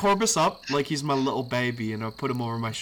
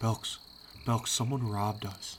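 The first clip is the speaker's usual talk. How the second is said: slow, soft, breathy whisper; 7 dB quieter than usual. Whispering in a sleeping companion's ear to wake him: whispering in character. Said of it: "I just whisper in Belk's ear".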